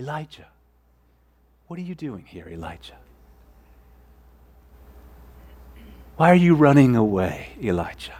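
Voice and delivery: hushed, soft half-whisper. Quoting god calling to elijah, after a booming command: half-whispering. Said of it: "and then whispers".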